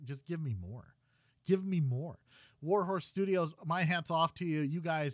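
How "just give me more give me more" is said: plain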